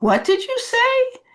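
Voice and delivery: incredulous, disbelieving, very high-pitched tone. Showing how to answer someone who says something inappropriate, in a disbelieving tone. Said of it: "use a disbelieving tone of voice".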